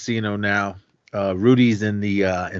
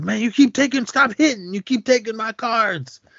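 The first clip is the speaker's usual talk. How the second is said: play-acted, very shrill, heated, angry hollering; 13 semitones higher than usual. Retelling how Rudy yelled at an old guy at the table: imitating someone yelling. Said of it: "Rudy starts yelling at the, at the old guy".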